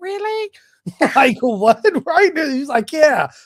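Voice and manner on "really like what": put-on little girl voice, high-pitched. Recalling the speaker's dad calling about skydiving, the speaker replays a voice like a little girl. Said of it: "my voice sounded like a little girl".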